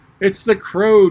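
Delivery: shrill, loud voice crying out in alarm. Narrator reading Tweedledum crying out, in a shrill voice of alarm. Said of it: "in a shrill voice of alarm".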